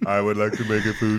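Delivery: put-on silly, dim-witted computer robot voice. Joking about a supercomputer's slower younger brother, the speaker does a dumb computer voice. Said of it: "I'm trying to do a dumb computer voice".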